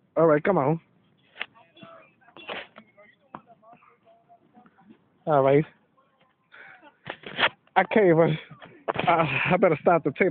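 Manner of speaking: out of breath. After struggling with sit-ups, deciding to stop the tape, out of breath. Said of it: "I'm out of breath".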